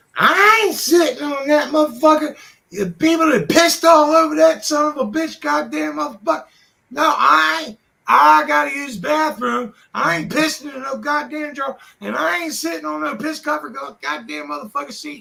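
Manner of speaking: play-acted, very high, loud, angry ranting. Retelling a woman walking into the bathroom: imitating her bitching. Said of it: "starts bitching".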